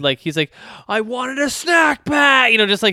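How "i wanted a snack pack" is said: put-on, high screaming at the top of his lungs. Describing a funny scene where he demands a snack pack, retelling him screaming. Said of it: "screaming at the top of his lungs".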